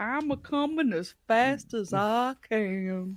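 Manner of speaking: very slow, soft, drawn-out drawl. Imagining a guy's reply when asked what they're doing today, talking really slow. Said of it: "you'd have to talk really slow".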